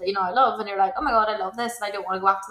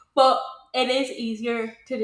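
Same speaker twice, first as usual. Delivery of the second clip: drawn-out words spoken through a yawn; 3 semitones higher than usual. In a conversation comparing home to here, talking through a yawn. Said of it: "excuse me, yawning".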